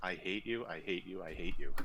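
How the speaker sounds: usual speaking voice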